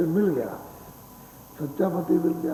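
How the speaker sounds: ordinary talk, nothing marked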